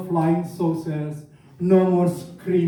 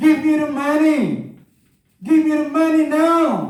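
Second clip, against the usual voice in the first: put-on drunk, demanding screaming, high, drawn out; 9 semitones higher, 4 dB louder than usual. Retelling the drunk dad screaming at the mom, imitating dad screaming. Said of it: "he was screaming at my mom".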